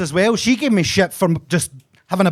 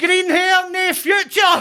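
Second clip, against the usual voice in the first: put-on very high little-girl shout; 12 semitones higher than usual. Retelling what a little girl shouted after the speaker, imitating a little girl shouting. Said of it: "she shouts".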